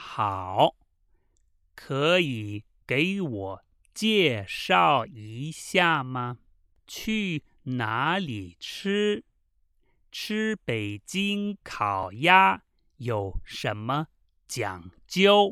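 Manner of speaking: very slow reading, pausing phrase by phrase. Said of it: "this time very slowly".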